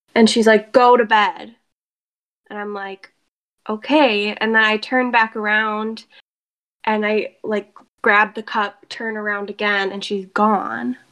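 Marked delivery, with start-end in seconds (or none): 0.8-1.6 play-acted angry, cross, stern voice. Telling a night story, the speaker quotes a woman who told them to go to bed: imitating an angry command. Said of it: "in the most angry, like, tone".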